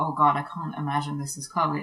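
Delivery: ordinary talk, nothing marked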